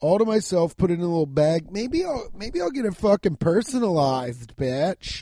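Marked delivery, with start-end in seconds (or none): 1.7-5.2 bratty voice, much higher pitch. Joking about wanting a personal microphone, in a brat voice. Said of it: "That was a brat voice".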